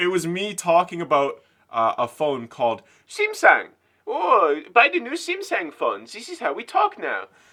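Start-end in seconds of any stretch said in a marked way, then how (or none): 4.1-7.3 very bad put-on Eastern European accent, sing-song. Retelling a phone ad they once recorded, in a bad Eastern European accent. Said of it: "the worst, I don't even know what it was, Eastern European accent".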